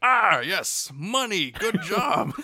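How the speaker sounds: very high, slow, swooping, loud, drawn-out cartoon voice. Imagining how Mister Krabs would react, in a Mister Krabs voice. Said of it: "if it was Mister Krabs, he'd be like".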